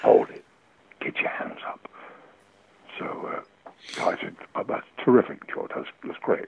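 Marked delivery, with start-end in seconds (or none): 0.0-1.9 soft, quieter, slower put-on male Cockney accent. Retelling a line George said, imitating George's soft Cockney accent. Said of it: "one of those nice, soft Cockney accents".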